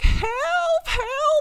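very high, drawn-out, stretched-out shrieking scream. Recounting a normal work shift, retelling a lady screaming. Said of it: "I hear this lady screaming like".

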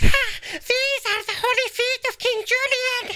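straining, high put-on cartoon voice. Performing a bit requested by Cass, in a strained cartoon voice. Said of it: "this is going to hurt my voice".

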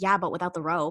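mock muttering under breath. Retelling a student's remark in class, imitating someone muttering under their breath. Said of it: "says under the, her breath".

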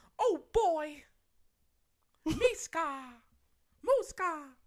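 high, loud squeaking voice. Talking about doing impressions, the speaker does a Mickey Mouse impression. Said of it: "my Mickey Mouse impression".

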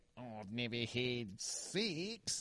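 put-on Australian accent. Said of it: "It's fucking legendary".

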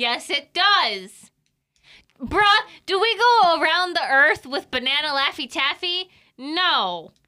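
shouting. Arguing with another player that the question is valid, yelling. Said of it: "I don't know why we're yelling".

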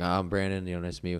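normal talking voice

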